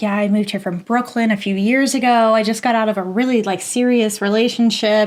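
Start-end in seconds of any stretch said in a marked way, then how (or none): none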